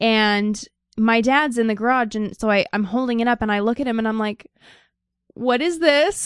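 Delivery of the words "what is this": high voice on the verge of crying. Retelling holding something up to a parent: imitating own near-crying voice. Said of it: "getting ready to cry".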